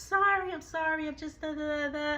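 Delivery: very meek, very soft voice. Retelling how she apologized while he went off on her: imitating someone speaking meekly. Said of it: "very, very, very meek".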